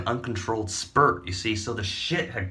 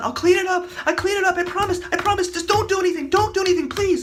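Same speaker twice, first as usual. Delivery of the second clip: shrill, high, raised voice, frantic and desperate; 7 dB louder than usual. Retelling a man running over to clean up: imitating a man pleading. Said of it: "he comes running over and says".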